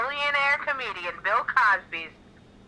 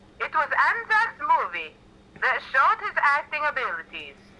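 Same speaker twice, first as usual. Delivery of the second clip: put-on, laid-on Eastern European accent; 4 semitones higher than usual. Reading a narration script aloud, in a Bartok accent. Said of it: "I think I'm talking more like Borat".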